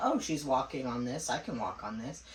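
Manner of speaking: plain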